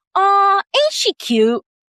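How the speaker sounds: very high, slow, put-on Southern belle drawl. Retelling the VP's remark after their first town hall call, imitating a Southern belle. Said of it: "it was a play on a Southern Belle".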